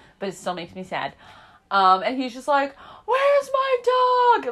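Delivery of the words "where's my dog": mock very high, distressed, upset voice, drawn-out "my". Describing the farmer whose dog went missing; imitating an upset farmer. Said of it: "you could see how upset he is".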